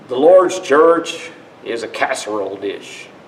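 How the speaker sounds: put-on light Southern twang. Retelling a scripture line as if said by a Southerner, in a Southern twang. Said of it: "say it with a little more southern twang".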